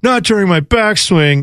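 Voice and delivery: mock sulky, whiny kid-style griping voice. Retelling a golfer complaining after a photographer's shutter: imitating a whiny complaint. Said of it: "it just very much had that vibe".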